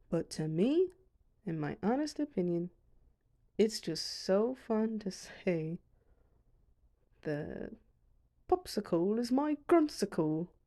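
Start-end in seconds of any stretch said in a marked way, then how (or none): 7.2-10.4 weird, wonky put-on British accent. Saying a dragon's nickname just for fun: weird british accent. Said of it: "in a weird British accent".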